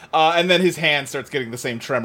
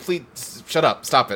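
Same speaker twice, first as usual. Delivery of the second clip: plain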